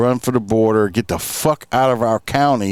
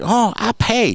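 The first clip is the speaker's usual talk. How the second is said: very high put-on Chinese accent; 10 semitones higher than usual. Retelling people offering to pay, in a put-on Chinese-sounding accent. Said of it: "all my foreign accent people sound Chinese".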